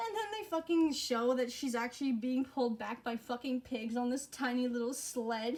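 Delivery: normal talking voice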